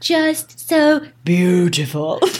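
dramatically deep, dropped bass voice. Teasing the other speaker by imitating their very deep voice. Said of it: "You went down, like, eight octaves".

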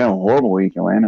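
mock muttering under breath. Retelling what he kept saying, muttered under breath. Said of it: "he kept saying it under his breath".

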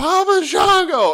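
put-on very high, very loud, shrill child's scream. Retelling being a small child nobody understood, acting out a child's scream. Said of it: "And I started screaming".

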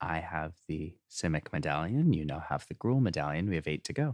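quiet, hushed, private aside. Speaking in character to Dizzy about the medallions: said quietly. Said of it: "I will say to Dizzy quietly".

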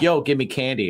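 plain

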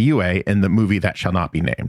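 plain

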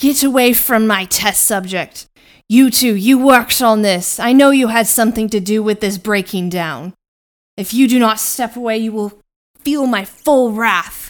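loud yelling. Narrating a fight, the speaker voices a character yelling at two creatures breaking a cage; yelling. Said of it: "he yells out".

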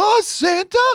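very high, squeaky, terrible reindeer voice. Host answering a listener about Christmas movies, doing a terrible Rudolph imitation. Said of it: "That was a terrible imitation of the voice".

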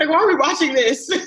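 high, laughing, incredulous tone.

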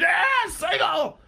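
excited, pumped-up, very loud, high-pitched scream. Acting out an arrogant man watching the Tigers game, retelling a scream. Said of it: "he screams".

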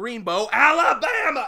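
screamed shout, loud and high-pitched.

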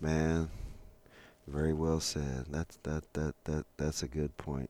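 acted muttering under breath. Retelling what the driver said during the drive home: imitating someone muttering under his breath. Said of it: "under his breath".

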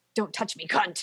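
put-on creepy voice. Retelling Kat's line to Mrs. Drake in the infirmary; creepy voice on the last word. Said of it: "The last word comes out in this like creepy voice".

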